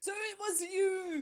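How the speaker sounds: loud, high-pitched shout. A character spots a twin wearing his hat and charges at him; shouting. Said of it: "Mug's shouting".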